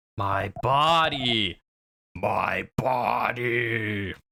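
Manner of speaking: eerie, ghostly voice. Reading a game line from a bursting soul: eerie voice. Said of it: "A soul burst out with an eerie voice".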